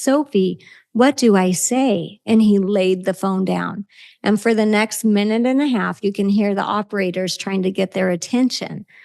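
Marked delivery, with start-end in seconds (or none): 0.0-2.2 very slow, small, broken voice. Parent retells a 911 call, quoting son Josh, imitating Josh's little broken voice. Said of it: "in his little broken voice".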